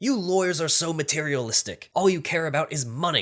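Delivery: put-on impatient tone. Telling a joke, the speaker acts out the cop's reply to the lawyer; mock-impatient cop. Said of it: "The cop loses his patience and says".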